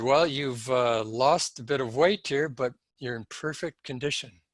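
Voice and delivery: plain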